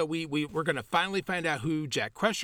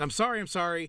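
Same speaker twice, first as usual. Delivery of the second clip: put-on frightened, scared voice. Retelling a character fleeing a door in fear: imitating Deanna Troi scared. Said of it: "scared, and she's like".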